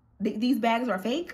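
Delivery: ordinary talk, nothing marked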